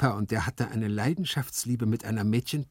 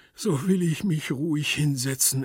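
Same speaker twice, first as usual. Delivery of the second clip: strained groaning with bottled-up fury held down; 4 semitones higher than usual. A master answers his servant, groaning. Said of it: "ächzte Gumpellino".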